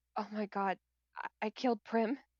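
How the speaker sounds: muttered under her breath. Playing a character in a tabletop game beside a monster, muttered under her breath. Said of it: "like under her breath".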